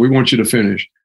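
plain

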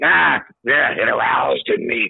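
slow, drawn-out, put-on raspy voice. Joking about a quoted line and saying it again: put-on raspy voice. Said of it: "Say it raspy".

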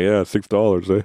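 chuckling, teasing, laughing through the words. Retelling a reply to a son about his six dollars: imitating own laughing reply. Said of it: "even though I'm laughing like".

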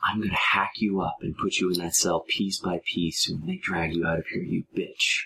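close, hushed, menacing whisper. Narrating a game scene where a character leans down, whispering in your ear. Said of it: "he just leans down and whispers in your ear".

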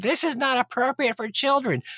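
screaming, pitched very high. Retelling a mother in a theater dragging her child out, retelling a scream. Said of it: "She was screaming".

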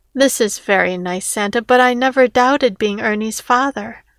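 ordinary delivery

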